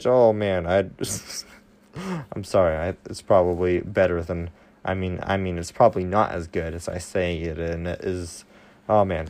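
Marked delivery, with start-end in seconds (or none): 0.7-5.6 stuttering, stumbling over the words with restarts. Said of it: "I'm stuttering now".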